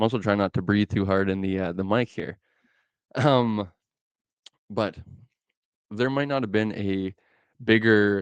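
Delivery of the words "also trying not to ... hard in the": plain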